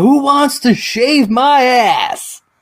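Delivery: very high, very slow, drawn-out holler. Retelling a college party story, imitating a guy who yelled out. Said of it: "And he yells out".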